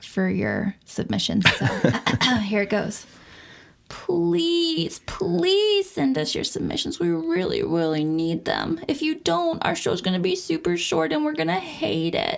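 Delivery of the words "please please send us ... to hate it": mock whining, pleading tone. A podcast host, given permission to beg, asks listeners for submissions with put-on whiny begging. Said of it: "permission to whine and beg and cry".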